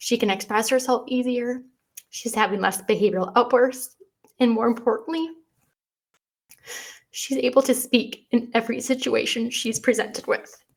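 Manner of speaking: close to tears. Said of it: "Sorry, I'm getting emotional about it".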